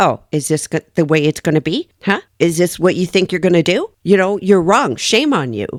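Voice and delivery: condescending, sarcastic telling-off tone. Describing a woman in handcuffs talking to the judge: imitating a scolding mom. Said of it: "as if she is a mom or a nanny scolding a five year old".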